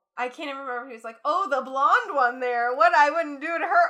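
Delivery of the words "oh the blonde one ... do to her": very loud, high, fake and poorly done Canadian accent. Retelling a line from a true crime reenactment: imitating a bad canadian accent. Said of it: "trying to do a Canadian accent".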